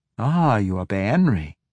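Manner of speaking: usual speaking voice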